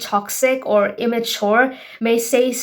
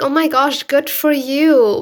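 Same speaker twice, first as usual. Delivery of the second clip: slow, put-on, sugary, fake-nice sweetness; 4 semitones higher, 4 dB louder than usual. Imitating a jealous person's backhanded compliment: imitating a fake nice tone. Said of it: "saying it in the most fake nice way".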